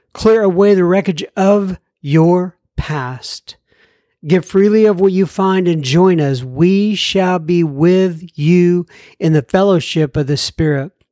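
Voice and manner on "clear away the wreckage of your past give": usual speaking voice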